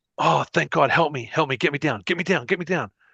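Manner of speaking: desperate, repeated, pleading tone. Voicing a character stuck to a wall, begging the players: pleading to be freed. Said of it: "he looks up at you, and he's like".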